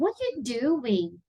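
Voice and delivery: slow, wide-ranging question tune on What are you doing.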